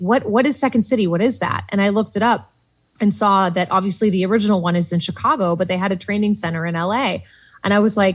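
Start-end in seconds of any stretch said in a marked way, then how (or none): none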